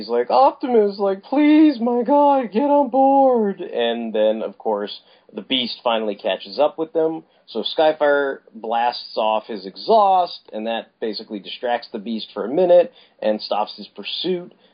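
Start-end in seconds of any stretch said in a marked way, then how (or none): 0.3-3.6 very high, drawn-out, tearful sobbing voice. Retelling a comic scene where Bumblebee begs Optimus to board: imitating Bumblebee crying. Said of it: "Bumblebee basically is, like, crying now".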